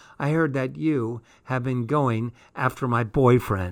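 ordinary talk

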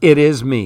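plain

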